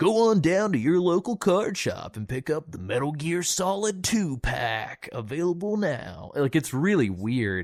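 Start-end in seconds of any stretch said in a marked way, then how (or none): 0.0-6.3 silly, goofy, high-pitched commercial announcer voice. Describing in-game card shop ads, mimicking their voiceover: goofy announcer voice. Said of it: "with a goofy voiceover".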